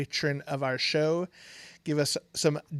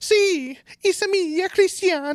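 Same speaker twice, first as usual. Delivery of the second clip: put-on Italian accent, higher and louder; 7 dB louder than usual. Saying the other speaker's name in a joke: Mario voice. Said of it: "your name said in Mario's voice, who's Italian".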